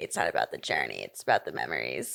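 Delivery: very low, deep voice with swooping pitch. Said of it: "That's a pretty good impression".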